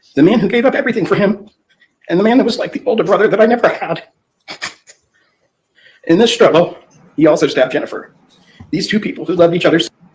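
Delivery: words pushed out through sobs, tearful and high. Speaking about a stabbed friend and Jennifer, crying while speaking. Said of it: "I'm gonna need you to stop crying".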